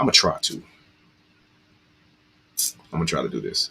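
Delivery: hushed near-whisper with emotion rising. Before a story about a partner serving a long prison term, getting emotional. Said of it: "I can feel within myself that I'm getting emotional".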